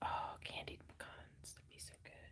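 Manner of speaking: soft whisper. Talking about food while crocheting, whispering. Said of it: "I don't mean to creepy whisper about food".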